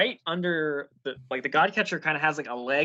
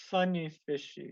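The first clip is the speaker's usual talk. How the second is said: quiet mumbling under the breath; 6 dB quieter than usual. Voicing a dazed Renaer: Renaer mumbling.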